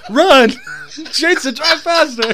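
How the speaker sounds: shrill, very high, very loud shrieking. Recalling a passenger's reaction while he drove, retelling a scream. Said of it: "started screaming".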